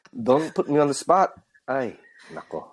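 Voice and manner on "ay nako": whispered, soft, breathy Filipino accent under the breath. Guest asked by the host to demonstrate for the audience: Filipino accent. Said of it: "Can you give us?".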